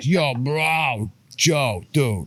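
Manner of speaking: put-on New York accent. Describing how his friend, guitar player Jake, talks, imitating Jake. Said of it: "That's how he talks".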